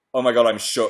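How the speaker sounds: ordinary delivery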